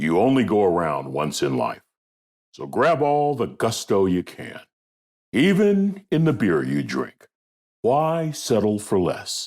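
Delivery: classic broadcast radio announcer commercial voice. Recreating an old beer commercial from memory, in a best broadcast radio voice. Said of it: "Let me get my best broadcast voice, my best radio voice ready for you".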